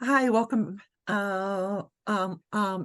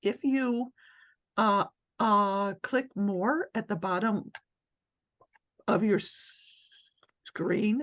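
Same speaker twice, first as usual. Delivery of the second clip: halting, stuttering, stammering speech. Speaker giving call instructions to participants, stuttering. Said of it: "sorry, I stutter".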